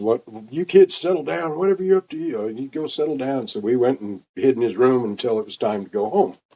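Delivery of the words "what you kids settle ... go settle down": scolding, shooing mother's telling-off voice. Retelling how a boy's mom yelled at the kids who ran inside; imitating a mom yelling. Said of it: "I remember his mom yelling at us".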